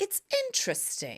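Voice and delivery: put-on very high voice with a slight British accent. Recounting what they said to someone, with a slight british accent. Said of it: "that was a little bit British".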